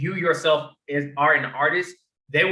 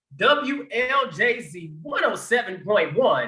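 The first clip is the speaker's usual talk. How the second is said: slow, pitched-up put-on radio DJ announcer voice; 6 semitones higher than usual. Showing the group their radio voice while reading station call letters: radio announcer voice. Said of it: "that's my radio voice for you guys right there".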